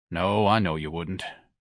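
ordinary talk

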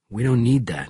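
ordinary talk

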